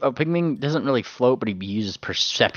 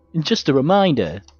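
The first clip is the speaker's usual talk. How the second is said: put-on goon voice, much higher; 7 semitones higher, 6 dB louder than usual. Voicing a roleplay character gently reminding people, goon voice. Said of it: "he says in his goon voice".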